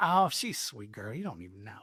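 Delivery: quiet, soft put-on twang on every word. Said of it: "he had this, like, twang about him".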